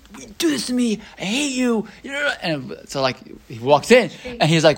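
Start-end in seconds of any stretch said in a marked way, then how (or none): 0.2-2.3 angry, high-pitched screaming outburst. Retelling a story of a farmer at the ark: imitating someone screaming. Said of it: "he's screaming at Kadosh Baruch Hu".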